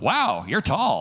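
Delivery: put-on know-it-all tone, stating the obvious. Imitating people who point out height, in a know-it-all voice. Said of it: "when they use the voice like they're telling me".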